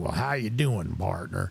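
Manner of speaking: put-on gruff, rough, grizzled old Western cowboy voice. Retelling an old guy he ran into greeting him: grizzled old western man. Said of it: "he just sounded like he was a, grizzled old guy in the West".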